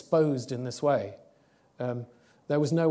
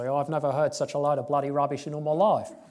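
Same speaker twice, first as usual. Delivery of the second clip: put-on strong, laid-on New Zealand accent. Retelling a cardiac surgeon piping up from the back of the room: Brian Barratt-Boyes New Zealand accent. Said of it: "a strong New Zealand".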